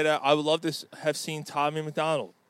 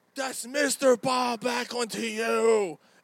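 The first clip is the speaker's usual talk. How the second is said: mock very slow, high, drawn-out, in-your-face scream; 7 semitones higher than usual. Retelling a wrestler screaming in someone's face: imitating Bob Backlund screaming. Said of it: "he ran and screamed in my face".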